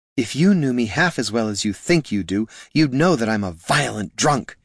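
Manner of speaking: hissing, hissed. Narrator reading a woman's line to the wizard she has grabbed, hissing. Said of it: "she hissed into his ear".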